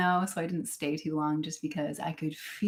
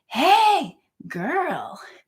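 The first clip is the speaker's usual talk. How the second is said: very high, loud, sing-song swooping shout; 10 semitones higher, 8 dB louder than usual. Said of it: "and then he just shouts again".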